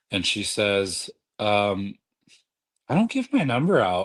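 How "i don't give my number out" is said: sassy, sarcastic, pitched up. Speaker retells a woman at the gym refusing her number: imitating a sassy, sarcastic tone. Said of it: "in a sassy kind of way".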